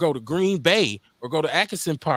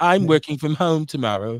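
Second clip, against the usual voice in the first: put-on English accent. Talking about working from home tomorrow, in a fake English accent. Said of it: "in my English accent".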